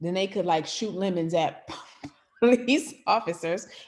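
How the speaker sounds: giggling, talking through laughter. Recounting what someone said, laughing while talking. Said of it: "I'm sorry, I'm laughing".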